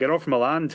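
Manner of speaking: put-on Scottish accent. Urging someone to try the line themselves, in a scottish accent. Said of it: "you do it in your uh, Scottish accent".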